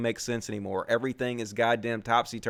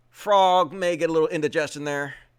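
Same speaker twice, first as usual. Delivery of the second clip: ordinary talk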